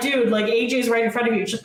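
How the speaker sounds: ordinary talk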